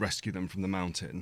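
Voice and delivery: ordinary delivery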